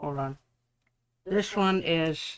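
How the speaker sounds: talking with mouth full. Talking to viewers about paints, the speaker talks with something in the mouth. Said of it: "It's really hard to talk when I got that in my mouth".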